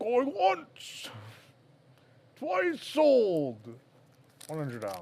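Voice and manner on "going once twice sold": badly done monster voice with swooping pitch. Auctioning off a pin, the speaker closes bidding in a terrible Sweetums impression. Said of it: "It's a terrible Sweetums impression".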